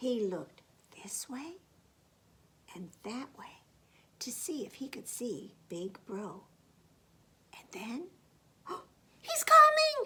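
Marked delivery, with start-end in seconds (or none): 8.7-10.1 very high, very loud, piercing frightened shriek. Reading a story aloud, the mouse spots Big Bro coming: shrieking in fright. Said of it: "Shrieked the mouse".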